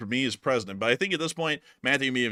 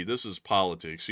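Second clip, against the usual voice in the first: normal talking voice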